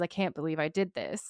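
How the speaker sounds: acted panicked, breaking-down voice. Retelling a scene where a character has a breakdown: imitating a character breaking down. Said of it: "he is having a mental breakdown".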